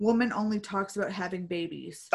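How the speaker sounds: plain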